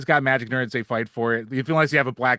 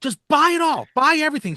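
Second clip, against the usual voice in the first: very high, shrill yelling; 6 dB louder than usual. Retelling a son on the phone to his parents: imitating a son yelling. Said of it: "he's just yelling at his parents".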